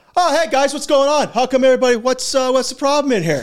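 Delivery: very high voice, talking through stuffed mouth. Retelling a teammate walking in eating pizza: imitating talking with mouth full. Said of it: "Two huge pieces of pepperoni pizza in his yap".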